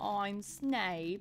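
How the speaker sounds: thick nasal voice, pushed through the nose. Working out how to do a Snape voice: nasal Snape voice. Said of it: "he's got like a nasally voice like".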